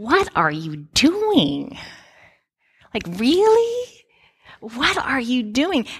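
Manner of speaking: disbelieving, incredulous tone with swooping pitch. Voicing a father-in-law asking Moses what he is doing: imitating an incredulous question. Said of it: "I can just hear his voice as he asks Moses".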